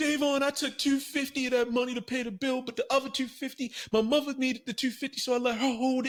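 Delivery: very high, weepy, sobbing, crying voice. Retelling what she said about the money: imitating someone crying. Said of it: "she comes to my house crying again".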